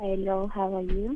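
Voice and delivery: very hushed, too soft, barely audible voice. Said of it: "Please speak loudly".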